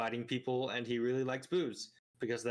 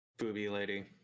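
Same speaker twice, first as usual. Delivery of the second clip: level, flat, exasperated deadpan monotone; 3 semitones lower than usual. Repeating the other speaker's phrase back: monotone. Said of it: "Why is you just monotone going".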